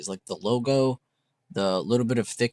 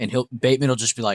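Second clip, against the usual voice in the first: ordinary talk, nothing marked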